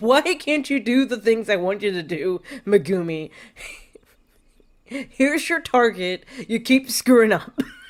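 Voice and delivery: irritated, fed-up nagging tone. Imitating a game's cat character as an irritated, disappointed man. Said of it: "sounds like an irritated man in his thirties just disappointed in life".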